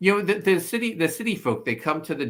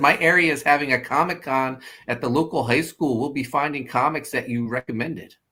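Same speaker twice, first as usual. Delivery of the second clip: ordinary talk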